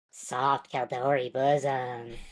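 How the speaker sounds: dreamy, high-pitched little gnome character voice. Retelling a gnome announcement once made in a roleplay game: imitating a dreamy high-pitched gnome voice. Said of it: "in, like, a dreamy voice".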